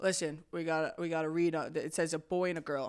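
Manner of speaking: put-on cop voice, super nonchalant and totally casual. Retelling what cops said: imitating nonchalant cops. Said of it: "cops super nonchalant".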